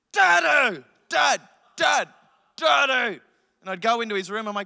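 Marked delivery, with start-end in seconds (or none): 0.1-3.2 mock angry deep child voice, louder. Retelling a two-year-old son waking him at five: imitating an angry deep voice. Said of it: "angry, deep".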